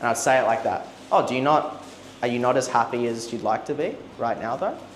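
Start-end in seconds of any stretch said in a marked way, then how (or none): 1.1-4.8 curious, endearing slight upward rise on "though". Showing how to ask a question, little upward inflection at end. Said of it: "See that little upward inflection as well? It's like, it's curious, it's endearing".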